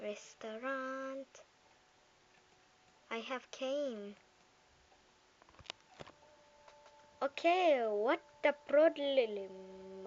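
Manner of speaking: loud, stiff, put-on robot speech. Playing a restaurant game, arriving at the restaurant in a robot voice. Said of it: "I just used my my my pro robot voice".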